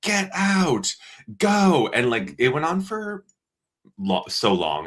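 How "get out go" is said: mock very high-pitched yell. Retelling a neighbour's breakup, imitating a man yelling. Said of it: "yelling at this woman, like".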